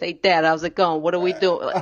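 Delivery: Italian-American accent. A voice coach shows how they'd greet their dad: Sopranos accent. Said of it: "I'd start talking like this".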